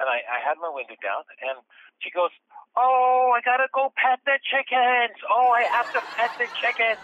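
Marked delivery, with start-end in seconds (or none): 2.8-7.0 put-on very high, drunk young woman's party voice. Retelling a late-night encounter beside a bar: imitating a drunk woman. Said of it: "this really drunk young lady".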